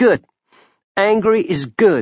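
firm, resolute, pitched a bit high. A woman replies to a friend who admits being scared and angry, firmly. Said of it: "Clara said firmly".

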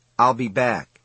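plain

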